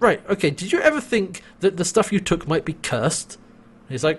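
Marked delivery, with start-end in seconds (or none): 0.0-3.3 put-on fed-up, exasperated, impatient snapping outburst. Retelling a scene where a character loses patience: imitating someone snapping. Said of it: "she just snaps and is like".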